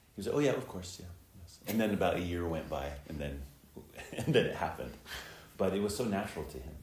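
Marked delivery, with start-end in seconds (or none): 0.4-1.6 breezy, offhand, matter-of-fact tone. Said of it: "such a matter-of-fact thing".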